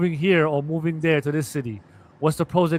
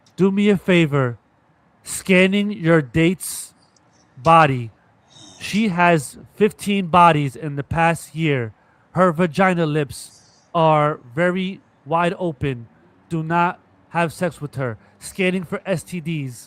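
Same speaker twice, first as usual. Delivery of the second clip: slow, drawn-out, scanning machine robot voice. Joking about robots scanning a date's body: robot voice. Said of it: "Robots are just gonna come along and be like".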